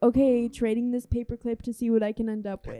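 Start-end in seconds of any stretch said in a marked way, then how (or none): none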